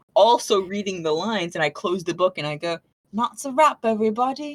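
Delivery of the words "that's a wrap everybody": put-on voice of a small Victorian boy. Describing the planned ending of a reading, in a little victorian boy voice. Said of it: "my voice as a little Victorian boy".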